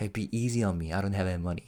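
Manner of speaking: hushed whisper, under the breath. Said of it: "that guy was whispering to [name]".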